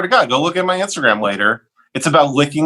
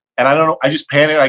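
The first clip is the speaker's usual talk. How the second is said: usual speaking voice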